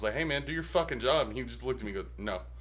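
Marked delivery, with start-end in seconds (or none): 0.1-1.3 acted, put-on yelling shout. Recounting the time they yelled at him: retelling a yell. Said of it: "I yelled at him".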